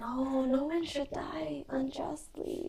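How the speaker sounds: soft, slow whisper. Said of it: "As, as you're sort of whispering all this".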